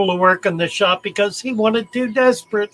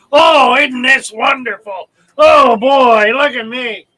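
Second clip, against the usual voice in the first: put-on loud, smug, cocky young man's voice; 3 semitones higher, 6 dB louder than usual. Telling of a young man who pulled snakes from cages, imitating a cocky young man. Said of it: "came in just full of himself".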